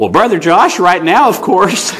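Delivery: put-on little crackly elderly man's voice. Retelling an old man's answer to his question, in a crackly old man voice. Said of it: "in his little crackly old man voice".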